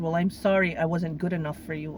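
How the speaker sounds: usual speaking voice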